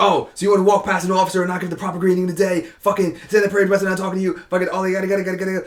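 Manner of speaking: high, ranting, tearing-into chew-out. Retelling how an officer blasted a young Marine: imitating an officer blasting someone. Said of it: "He's blasting me".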